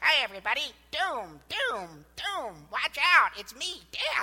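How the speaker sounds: silly, cartoonish comedy voice, high and loud. Voicing death as it now cries out a warning: high-pitched comedic voice. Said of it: "like a high-pitched comedic voice crying out".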